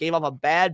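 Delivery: ordinary talk, nothing marked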